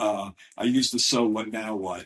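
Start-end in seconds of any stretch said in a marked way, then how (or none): none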